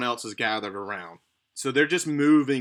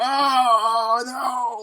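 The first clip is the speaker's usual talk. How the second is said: high, drawn-out pained scream; 11 semitones higher, 5 dB louder than usual. Voicing a woman struck down by a mace blow: screaming out in pain. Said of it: "screaming out in pain".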